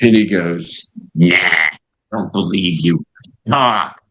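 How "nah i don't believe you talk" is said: put-on straight, strong, deep, low New York accent. Retelling how a man refused to believe your request to talk, in a deep New York accent. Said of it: "deep New York accent".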